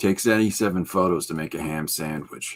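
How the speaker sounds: low, deadpan delivery after a pause. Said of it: "he gives a nice little pause".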